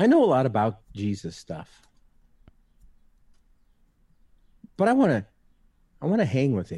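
emotional, choked up, voice catching, high and swooping. Podcast host sharing a personal thought with listeners, getting choked up. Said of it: "I'm going to get a little choked up here".

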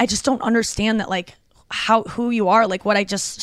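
plain

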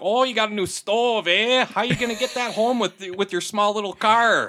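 put-on thick northern Minnesota accent, very high, loud. Imitating people up north near Duluth: imitating a strong northern Minnesota accent. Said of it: "the stronger the accent".

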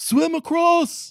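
very high, loud shouted yell. Narrator voicing a commander in the game, yelling an order. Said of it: "one commander yells out".

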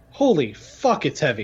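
muttered very quietly. Recounting a favorite movie line, muttered very quietly. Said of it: "very quietly, you got to pay attention to this, but mutters".

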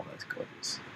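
soft, hushed whisper.

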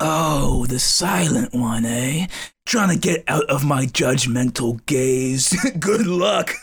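grandiose, theatrical, taunting cyclops monster voice. A game master voices a tall cyclops judging three silent characters: cyclops voice. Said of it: "The three of you standing in this blank room next to what appears to be like a 7 to 8 foot tall cyclops that has a snake for a tongue. / The three of you standing in this blank room next to what appea".

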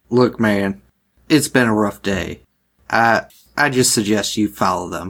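acted, hostile, aggressive, menacing tone. Speaking in character to strangers who approach: aggressive in-character line. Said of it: "That sounded really aggressive".

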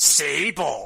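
very loud, rough, hard bellowing shout. Continuing the bit, shouting the one line remembered: Marc Mero impression. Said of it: "That's my Marc Mero impression".

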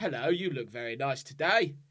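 loud, bad, put-on English accent. Co-host mimicking a clearly American actor playing an ex-boyfriend, bad fake English accent. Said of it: "The worst English accent".

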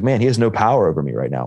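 normal talking voice

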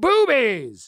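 shrill, blasting, very high, very loud shout. Recounting yelling along with a football crowd, retelling a yell. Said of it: "I yelled".

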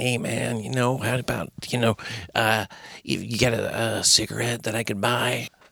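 mock casual California voice. Retelling a man in his forties who asked to buy a cigarette, imitating a california accent. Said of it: "he sounded like he was from California".

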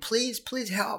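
play-acted, high-pitched screaming with voice shooting up. Retelling slipping into fast water at night: imitating own screaming. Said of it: "I was, like, screaming".

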